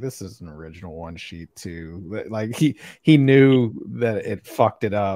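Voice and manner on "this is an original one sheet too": put-on mutter, lower and quieter. Retelling what he said after a dry marker spoiled the signature: imitating muttering under his breath. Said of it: "under his breath".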